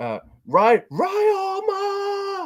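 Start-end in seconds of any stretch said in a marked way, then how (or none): 0.9-2.5 very high falsetto, drawn out and stretched. Retelling the commentary at the end: imitating Milano in falsetto. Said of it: "you're saying it in that falsetto".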